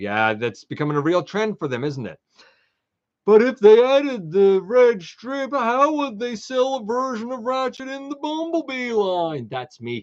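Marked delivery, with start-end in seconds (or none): 3.3-9.5 sarcastic, raised, pitched-up show-host voice. Commenting on toy releases, doing Input's sarcastic voice. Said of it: "doing the sarcastic input voice that he does".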